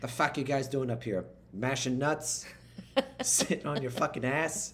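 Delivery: put-on Boston accent, fuck pronounced as fack. Asked to do an impression of his captain from Boston, in a Boston accent impression. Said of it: "Do your your impression of your captain who is from Boston".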